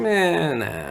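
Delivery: put-on dismissive older woman voice. Reenacting how the listener said no, in a mock dismissive shrug-off. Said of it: "Just like".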